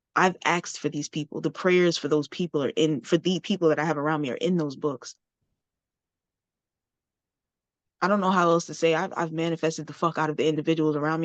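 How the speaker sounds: on the verge of crying, holding back tears. Talking about the people they keep around them, holding back tears. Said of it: "I'm trying not to cry".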